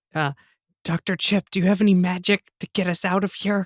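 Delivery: hushed whisper. Locked in during a tabletop game, a player's character speaks to a companion, whispering. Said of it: "I'm whispering".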